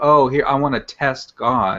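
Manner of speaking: mildly mocking, teasing, somewhat derisive tone. Retelling the other speaker's challenge to God: imitating a mocking tone. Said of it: "saying kinda mockingly".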